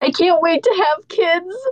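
very high-pitched, teary, near-crying voice. Answering whether she wants kids, sounding like crying. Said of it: "Are you fucking crying?".

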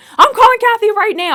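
frantic, very high, very loud shriek. Recounting a panicked emergency with a friend, retelling a scream. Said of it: "I'm screaming".

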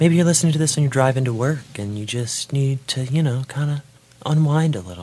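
put-on calm radio voice. Podcast co-hosts parodying a public radio show, in a mock NPR calm voice. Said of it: "we're just keeping it really calm".

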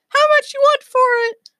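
very high, fast squirrel character voice. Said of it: "and he goes".

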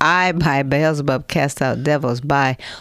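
ordinary delivery, nothing marked

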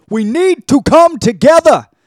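very loud, high-pitched, slow belted delivery. Quoting a line from Deep Blue Sea: Samuel L. Jackson voice. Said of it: "In more, more Samuel L. Jackson voice".

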